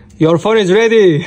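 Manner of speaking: high, loud yell carrying far. Telling a customer his phone is ready, yelling. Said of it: "you don't have to yell".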